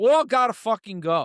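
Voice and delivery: New York accent. Ranting that all the politicians have to go, in a New York accent. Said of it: "I got all New York there when I said gotta go".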